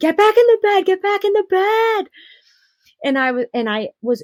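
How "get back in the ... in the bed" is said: shrill, high-pitched, loud yelling. Speaker recalls the nurse during labor, imitating a nurse yelling. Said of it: "And she yells at me".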